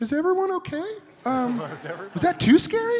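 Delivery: silly, very high-pitched, loud voice. After someone yelled cut and everyone froze, high-pitched voice. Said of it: "in my stupid high-pitched voice".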